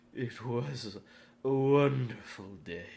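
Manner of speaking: faintly foreboding, somewhat ominous voice. Narrator reads his answer when his parents ask about his day: somewhat ominous voice. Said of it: "in a somewhat ominous voice".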